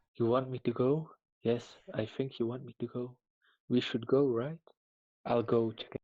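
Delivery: hushed stage half-whisper, half to self. Playing a character who half-whispers to nobody in particular: half-whispering in character. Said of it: "I just whispered to nobody in particular".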